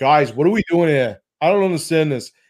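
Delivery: put-on regular-guy Boston accent. Imagining one guy questioning what the group is doing; Boston accent. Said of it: "I hope that he's got like a Boston accent".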